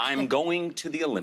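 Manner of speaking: put-on American accent held throughout. Asked to do it again in the accent game, repeating the line in an american accent. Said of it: "You're American".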